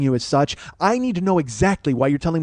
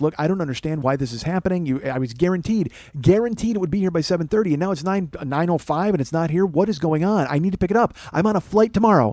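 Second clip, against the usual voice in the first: ordinary talk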